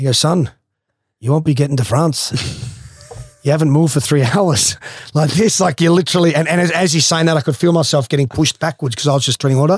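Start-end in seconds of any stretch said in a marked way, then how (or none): 0.2-5.6 put-on pommy English accent. Speaker retells what Reg said while he swam the English Channel, Reg's pommy English accent. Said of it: "in the pommy English accent".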